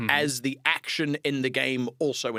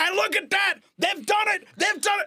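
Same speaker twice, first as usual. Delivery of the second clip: very high excited commentator voice peaking at the climax; 4 dB louder than usual. Showing how he commentated on a game, ramping up by the end: excited commentary. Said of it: "by the end of it, I'm going".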